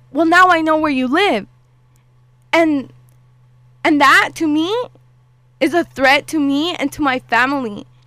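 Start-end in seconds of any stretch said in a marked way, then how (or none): 0.1-1.4 fast, raised, menacing, threatening voice. Speaker recounts a man's threat to them, retelling his raised voice. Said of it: "raising his voice".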